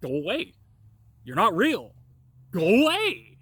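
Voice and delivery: loud, sing-song sarcasm, "away" stretched long. Retelling telling an imaginary demon to go away: imitating sarcastic mocking. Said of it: "sarcastically fucking telling it to go away".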